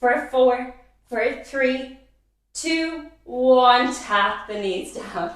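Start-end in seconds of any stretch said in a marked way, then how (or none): 0.0-3.9 trembling, shaking, very slow voice. Instructor counting down the end of a hold in a workout, voice shaking from effort. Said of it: "You probably can hear it in my voice. I'm shaking".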